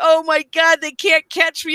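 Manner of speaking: mock screaming, imitating a man's scream. Speaker retells a man screaming at him during a high-speed chase, retelling someone screaming. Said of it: "he's screaming at me".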